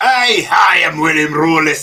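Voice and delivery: loud, exaggerated, over-the-top fake Scottish accent. Showing the Hollywood Scottish a casting director expected: over-exaggerated Scottish accent. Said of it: "the over exaggerated".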